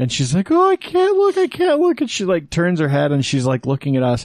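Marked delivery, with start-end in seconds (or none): 0.5-2.0 put-on nervous panic, much higher, louder, slower. Telling how a relative panicked before a blood draw, imitating her as a nervous wreck. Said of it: "like a nervous wreck".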